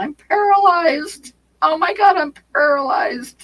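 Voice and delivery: play-acted frantic, panicked yell, very high, slow. Recalling a rider running in a circle after coming off the saddle, retelling her yelling. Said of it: "her running in a circle yelling".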